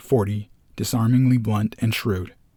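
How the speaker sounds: ordinary delivery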